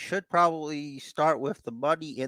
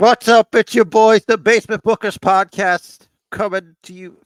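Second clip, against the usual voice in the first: very loud, high, aggressive in-your-face shout; 7 semitones higher, 10 dB louder than usual. Opening the podcast with the show's name: aggressive. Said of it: "Sorry, if I got aggressive".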